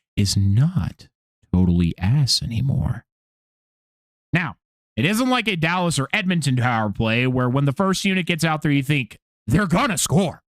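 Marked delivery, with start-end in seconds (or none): 0.2-3.1 very low, slow, drawn-out, conspiratorial aside. Speaking to the audience so others won't hear: saying it very quietly. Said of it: "I'm going to say this very quietly".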